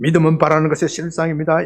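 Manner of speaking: sharp, punched-out, preacher-style proclamation. Imitating pastor 조영기 preaching, fast in rapid bursts. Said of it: "특유의 빠르고 총알같이 목소리로 탁 하는데 내가 흉내를 못 내겠어. 좀 흉내를 내서 봤으면 좋겠는데".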